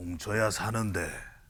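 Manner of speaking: very low, deep, hushed, barely voiced put-on voice. Acting out the former prime minister's thinking, Lee Nak-yon impression. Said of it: "제가 성대모사까지 동원을 해서".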